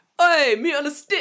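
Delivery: very high, very loud, shrill scream. Describing the seller opening his window, acting out a scream out a window. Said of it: "just screams out".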